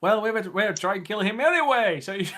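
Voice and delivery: shouting. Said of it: "And I just yell".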